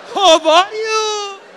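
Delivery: high, loud, enthusiastic, gushing Persian. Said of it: "we love expressing ourselves".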